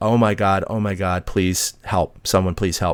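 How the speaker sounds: ordinary talk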